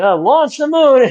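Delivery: high-pitched, barking villain voice. Retelling a movie scene, quoting the villain: Doctor Evil impression. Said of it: "where Doctor Evil's like".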